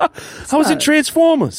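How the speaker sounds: pitiful, weak, sad, very high-pitched delivery. Trying out an impression on the show, in a pathetic Mark Wahlberg impression. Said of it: "I make him sound a little pathetic".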